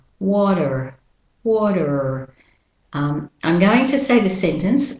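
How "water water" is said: American-accented pronunciation. An accent teacher contrasts pronunciations of a word: American pronunciation. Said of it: "Now for the American pronunciation".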